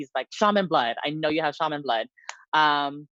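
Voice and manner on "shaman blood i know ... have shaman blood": usual speaking voice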